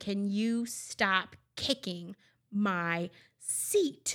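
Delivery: play-acted nastiest tone, mean, very drawn out. Retelling a stranger snapping at her two-year-old son, imitating a mean, nasty tone. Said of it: "in the meanest, nastiest tone".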